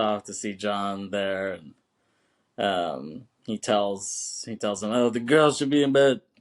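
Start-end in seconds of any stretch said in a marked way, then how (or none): 4.9-6.2 loud, higher, pissed-off tone.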